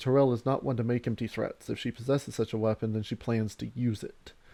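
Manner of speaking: plain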